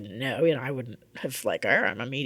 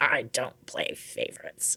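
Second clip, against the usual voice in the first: mock angry whispered female voice; 5 dB quieter than usual. Recounting a voice heard in one's ear, imitating an angry woman's voice. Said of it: "this very angry female voice in my ear saying".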